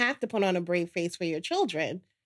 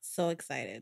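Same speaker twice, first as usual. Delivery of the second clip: level, flat voice with zero excitement; 7 semitones lower, 10 dB quieter than usual. Answering that Father's Day is coming up: not sounding excited. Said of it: "I don't sound excited".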